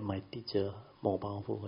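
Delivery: ordinary delivery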